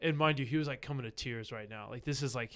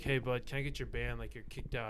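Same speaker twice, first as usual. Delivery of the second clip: plain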